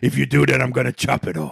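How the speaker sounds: rough, creaky voice. Retelling a boxing film scene, doing the trainer's reply as a Mick impression. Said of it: "that's a good impression".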